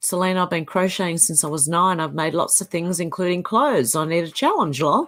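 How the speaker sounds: usual speaking voice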